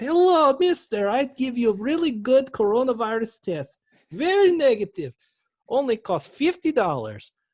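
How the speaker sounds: put-on very high, loud little boy voice with Russian accent. Talking about NBA coronavirus tests, slipping into a little Russian boy voice. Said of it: "my little Russian boy voice that I have".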